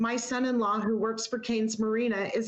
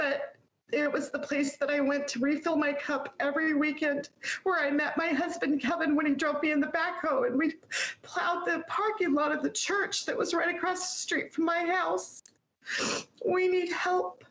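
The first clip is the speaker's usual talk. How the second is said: emotional, pitched-up, pleading voice; 6 semitones higher than usual. Pleading with a committee for help for the community: emotional. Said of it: "I'm sorry I'm emotional".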